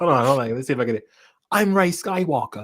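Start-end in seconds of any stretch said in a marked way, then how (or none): 1.5-2.6 put-on little-kid-sounding voice, higher and slower. Host trying a second time after failing once, failed Daisy Ridley impression. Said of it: "I sound like the little kid".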